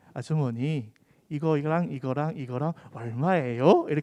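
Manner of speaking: put-on standard Seoul dialect accent. Retelling how the other person asked a shop owner for the price, in put-on Seoul dialect. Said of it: "서울말 쓸 거예요".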